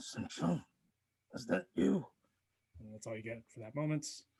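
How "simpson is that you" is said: weak, faint, rasping, rattling dragon-like voice. Game master voicing a reply from behind a door, faint raspy draconic voice. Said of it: "a very raspy, draconic voice reply".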